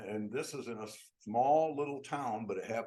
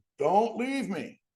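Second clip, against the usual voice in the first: loud, very high-pitched hollered scream; 10 semitones higher, 9 dB louder than usual. Retelling how someone left behind screamed at the departing caboose: imitating someone screaming. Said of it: "he's screaming at him".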